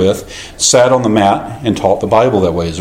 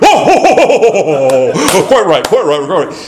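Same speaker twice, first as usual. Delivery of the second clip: put-on laughing brogue, much higher; 9 semitones higher than usual. Retelling Dr. Horn's reply to the speaker's apology, mimicking Dr. Horn laughing, Scottish brogue. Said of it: "laughing in the Scottish brogue".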